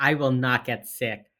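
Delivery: plain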